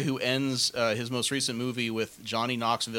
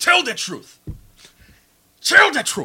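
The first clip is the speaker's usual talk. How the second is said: very loud, high-pitched, swinging bellow; 11 dB louder than usual. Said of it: "as African [name], bellow".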